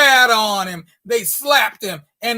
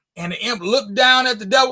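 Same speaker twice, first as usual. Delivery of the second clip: ordinary delivery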